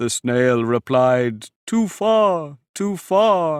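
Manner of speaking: plain reading voice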